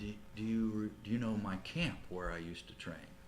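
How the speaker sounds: hushed, stumbling, halting half-whisper. Retelling what Muhammad Ali said at an event: Muhammad Ali half-whispering. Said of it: "talked in a whisper".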